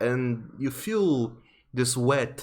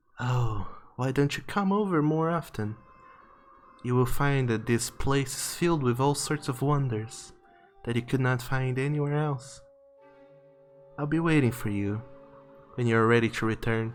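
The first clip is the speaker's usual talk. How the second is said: whispering very softly. Voicing the dread who leans to a player's ear: whispering very softly. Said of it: "just whispers very softly".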